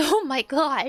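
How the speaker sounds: put-on terrified, scared man's voice. Retelling a dad's reaction after his son was shoved: imitating a terrified man. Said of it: "He was, like, terrified".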